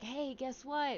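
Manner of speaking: quiet, soft half-whisper under the breath. Retelling how she calmed a yelling friend: imitating her own half-whisper. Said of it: "I just started whispering to her".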